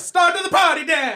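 astonished, very high-pitched Italian accent. Trying a line in a requested accent: surprised italian accent. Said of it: "Let's like do it as a surprised Italian accent".

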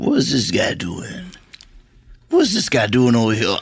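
lively put-on film-star voice, swooping pitch. A speaker acts out someone looking at them at a party, in a Javier Bardem impression. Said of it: "So I would like to do my impression of Javier Bardem".

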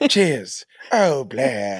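bad, fake, phony British accent. Quoting a show character another speaker calls a phony british man, phony british accent. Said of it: "This phony British man?".

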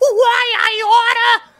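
very high, loud panicked cry. A level 1 oil baron knocked on his back looks up, panicked. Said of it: "looks up in a panic and says".

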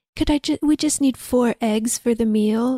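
soft, whispery put-on voice. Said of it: "His voice is very whispery, kinda sounds like [name]".

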